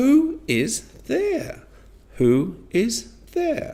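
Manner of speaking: high, slow upward pitch rise on "there". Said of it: "so we will say it like this".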